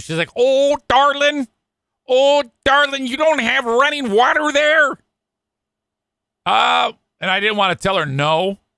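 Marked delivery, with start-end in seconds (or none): 0.4-4.9 put-on sweet, kindly, doting, high Michigan accent. Retelling what an office worker at the radio station said: imitating a sweet Michigan accent. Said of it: "She's got a sweet Michigan accent".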